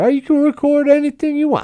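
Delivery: very high-pitched put-on Southern Midwest male accent. Retelling own reply to being recorded on voice memo: put-on Southern Midwest guy voice. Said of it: "this Southern Midwest guy".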